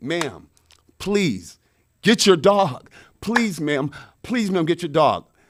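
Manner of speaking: loud, desperate, pleading tone on the edge of tears. Retelling begging a dog owner to call off her dog: imitating begging near tears. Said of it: "I'm begging the lady".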